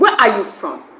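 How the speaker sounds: play-acted blunt, confrontational, aggressive, pushy tone. Speaker imitates people who ask where they're from, mimicking an aggressive question. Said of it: "they say it so aggressively".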